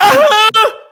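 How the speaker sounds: mock pained scream, very high and loud, yelped.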